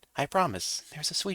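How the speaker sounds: ordinary delivery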